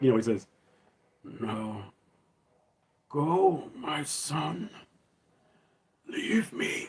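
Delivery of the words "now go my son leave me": very slow, breathy whisper. Quoting the unmasked Vader's words to his son: Sebastian Shaw's unmasked Vader voice. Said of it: "he would sound more like Sebastian Shaw in Return of the Jedi".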